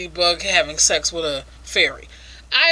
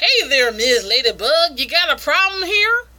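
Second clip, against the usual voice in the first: put-on Southern American drawl, pitched up; 6 semitones higher than usual. Retelling a weevil character's line: put-on Southern accent. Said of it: "supposed to be a Southern Weevil".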